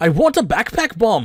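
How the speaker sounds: loud, high, not-so-good put-on Irish accent. Attempting an irish accent for laughs, admittedly not a good one: put-on irish accent. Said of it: "I can certainly give it a try".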